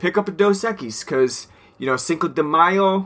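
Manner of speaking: bad, terrible, put-on Spanish accent. Co-host quoting the other host's beer pick, in a terrible put-on accent. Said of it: "I apologize for that terrible accent".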